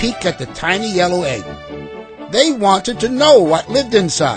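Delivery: ordinary delivery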